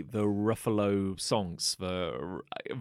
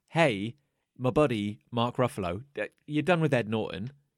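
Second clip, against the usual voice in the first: ordinary talk, nothing marked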